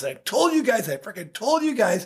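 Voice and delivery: mock screaming. Recounting a hot-tempered man yelling at the team in the locker room, retelling someone screaming. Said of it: "he's just screaming at us".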